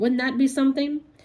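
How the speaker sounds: usual speaking voice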